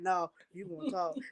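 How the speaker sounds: low, quiet, flat single-tone dad voice. Imitating the speaker's father answering the mother around eleven, low one-tone voice. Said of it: "And that low voice that he got, like that one tone".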